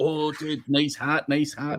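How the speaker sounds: put-on slow, drawn-out, drunken speech. Retelling what a drunk man said in a hotel lobby: imitating a drunk man. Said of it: "This drunk dude comes up".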